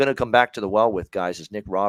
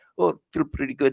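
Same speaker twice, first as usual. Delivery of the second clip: fake Russian accent, pitched up; 6 semitones higher than usual. Quoting the goalie's post-game comments, in a put-on russian accent. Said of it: "if I put my Russian accent on".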